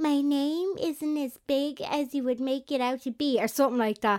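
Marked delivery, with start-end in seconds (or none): 0.0-3.4 slow put-on American accent. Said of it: "Martine obviously was putting on her American accent".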